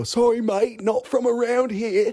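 very high, loud put-on Australian accent. Retelling escaping a surfer by pretending to be Australian: fake Australian accent. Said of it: "I pretended like I was Australian".

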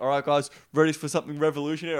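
put-on sarcastic tone. Retelling what was said to a group: imitating own sarcastic tone. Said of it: "I kinda say it sarcastically".

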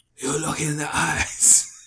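put-on speaking with a Cajun accent. Telling a story about the actor from Anaconda, do Jon Voight's Cajun voice. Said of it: "That was his Cajun voice".

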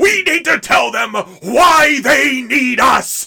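mock yelling, very loud. Retelling a film scene, imitating John Hurt yelling. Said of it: "I am yelling really loudly".

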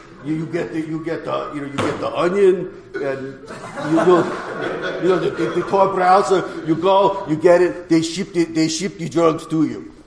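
put-on, heavy, thick Russian accent. Retelling what a man told him about the dark web, heavy russian accent. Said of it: "very heavy Russian accent".

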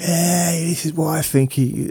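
play-acted, very high, dragged-out yelling. Recounting a man walking up near the manager, retelling his shout. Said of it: "started shouting".

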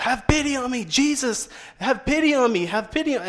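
high, long, stretched-out, drawn-out scream. Retelling how a man cried out as Jesus came by; retelling a scream. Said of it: "he just starts screaming out".

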